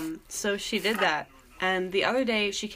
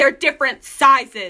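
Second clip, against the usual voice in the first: play-acted, loud, high, super angry outburst; 6 semitones higher, 11 dB louder than usual. Retelling what a woman snapped at them over a pair of shoes, imitating someone super angry. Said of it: "she got super angry".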